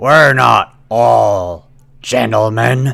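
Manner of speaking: hoarse, rasping voice. Narrating a game, voicing a stranger who gets up from a stool: raspy voice. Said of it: "comes a, a raspy voice. It says".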